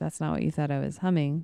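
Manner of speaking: normal talking voice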